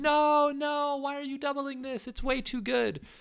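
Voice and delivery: acted, very high, shrill scream. Speaker retells reacting to a doubling decision at the mic; retelling own screaming. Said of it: "And I was screaming at the mic".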